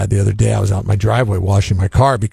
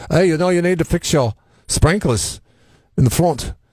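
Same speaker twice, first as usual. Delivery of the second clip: put-on chatty, pitched-up Irish accent; 9 semitones higher than usual. Retelling what the irrigation guy said about the sprinklers: Irish accent. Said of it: "he's Irish, so he says it like".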